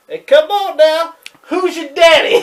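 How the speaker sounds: shrill, very loud, taunting full-blast shout. Quoting what Buddy says to the other speaker: Buddy Landel impression. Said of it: "Buddy goes".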